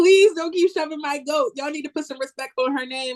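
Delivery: mock screaming with the voice thrown high. Recalling sitting in their room during a promo, retelling own screaming. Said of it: "I sat in my room screaming like".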